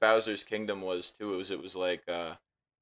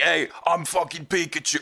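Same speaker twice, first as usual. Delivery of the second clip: very gruff, rough cartoon voice, loud and high; 8 semitones higher, 5 dB louder than usual. Recalling a favorite bit where someone gave Pikachu a gruff voice: gruff Pikachu voice. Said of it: "he gave Pikachu like a very like gruff voice".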